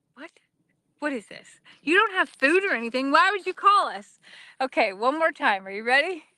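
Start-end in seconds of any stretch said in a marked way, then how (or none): 0.2-4.2 high-pitched cow character voice. Voicing the cows who stare back after a cattle call: voicing the cows' reaction. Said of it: "They're looking at me like".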